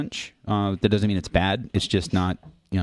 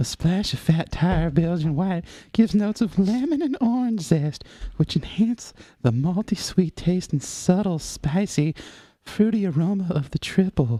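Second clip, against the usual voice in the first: put-on very high, wavering, shaky, creepy old-man voice; 10 semitones higher than usual. Asked to read the quote, the speaker performs it as the creepy Family Guy old man. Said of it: "read it as the weird, creepy old man from Family Guy".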